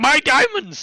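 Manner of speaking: very high, sudden, loud kobold cry. Voicing a kobold who suddenly runs off: kobold crying out suddenly. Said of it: "suddenly one of the kobolds goes".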